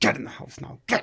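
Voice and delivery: mock through-gritted-teeth shout. Retelling scolding a puppy at five a.m. without waking anyone, reenacting a quiet shout. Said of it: "gritted your teeth".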